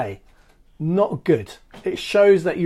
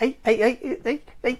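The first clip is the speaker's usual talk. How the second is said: put-on Liverpool accent, pitched up on each "hey"; 7 semitones higher than usual. Host having a bit of friday fun with viewers, greeting them in a put-on liverpool accent. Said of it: "Why am I putting a Liverpool accent on?".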